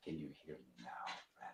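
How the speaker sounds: hushed, very soft voice. Checking whether a listener can hear, speaking softly. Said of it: "What if I talk softly?".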